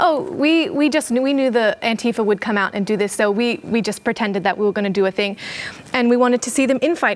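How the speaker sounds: ordinary talk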